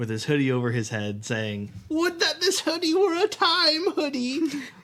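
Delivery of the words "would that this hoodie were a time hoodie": shrill, very high, loud put-on character voice. Quoting the dean's hoodie line from a gif in Dean from Community voice. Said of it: "you did his voice really well".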